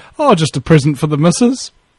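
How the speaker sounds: plain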